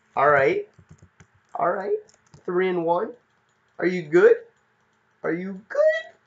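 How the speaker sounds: deliberately animated, high, loud, swooping sing-song. Talking to the audience, in a raised high voice. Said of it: "I'm just raising my voice high".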